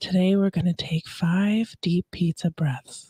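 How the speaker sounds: slow, soft, whispery ASMR-style whisper.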